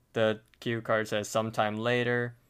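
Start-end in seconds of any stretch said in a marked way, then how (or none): none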